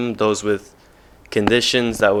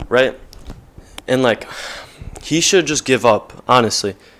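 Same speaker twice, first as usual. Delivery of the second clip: ordinary delivery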